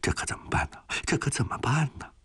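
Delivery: anxious, fretful, high-pitched muttering under the breath. Narrator reads the frightened translator stamping his feet, anxious muttering. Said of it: "跺着脚直嘀咕".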